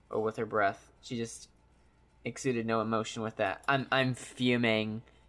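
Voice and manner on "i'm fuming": normal talking voice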